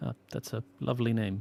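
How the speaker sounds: ordinary talk, nothing marked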